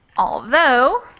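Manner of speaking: although, with stress on the second syllable -though. Class confirming which syllable is stressed: stress on second syllable of although. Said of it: "second syllable stressed".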